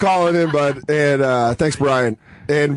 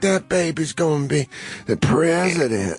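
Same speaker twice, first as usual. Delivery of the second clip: mock worn-out, exhausted, slow voice; 3 dB quieter than usual. Retelling a new mother calling out after giving birth: imitating post-birth tired voice. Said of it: "like she just got through a twelve round fight".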